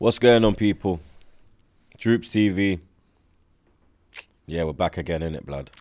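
deflated, really upset, with no hype. Opening the Troopz TV show intro: sounding really upset. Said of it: "you sound really upset".

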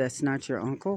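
ordinary delivery, nothing marked

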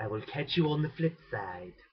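hammed-up, exaggerated, stretched-out "will". Signing off the video in a terrible Stewie impression. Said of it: "my terrible attempt at a Stewie impression".

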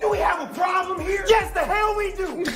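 loud shouting. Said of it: "why are you yelling at my customer".

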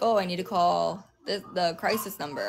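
ordinary delivery

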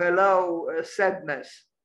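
normal talking voice

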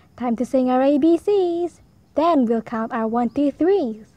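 ordinary delivery, nothing marked

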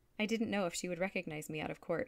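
ordinary delivery

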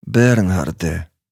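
quiet, soft, hushed. A woman cuts in on the man's cheerful chatter, quietly. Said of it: "стиха озвалась жінка".

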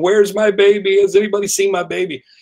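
high, bewildered, dazed, confused calling. Retelling a movie scene of confused, dazed parents: imitating a confused, dazed voice. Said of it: "walking around confused and dazed saying".

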